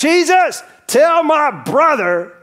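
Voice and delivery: mock man's voice, slow and shouted. Retelling a man in the crowd calling out to jesus: imitating a man screaming out. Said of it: "just screams out".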